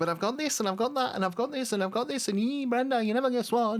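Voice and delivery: very high-pitched, boastful woman's voice. Retelling how a woman's very first conversation goes, in a female impression. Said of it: "I don't know where this voice has come from".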